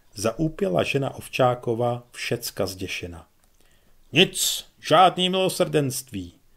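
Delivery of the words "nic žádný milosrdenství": dreadful thundering commanding voice, loud and high. Narrator reads a commander answering a woman's plea for mercy, thundering in a terrible voice. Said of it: "zakřměl pan velitel hlasem strašným".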